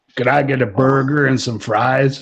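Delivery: put-on American Southern accent, laid over. Asked whether they can do Southern too, Southern US accent. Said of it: "can do southern too?".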